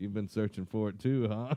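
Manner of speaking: normal talking voice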